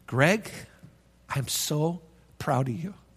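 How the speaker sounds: close, slow, soft whisper. Retelling what someone said into his ear: retelling a whisper. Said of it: "he whispered in my ear".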